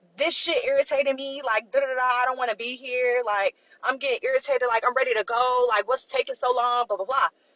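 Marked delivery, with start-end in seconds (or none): none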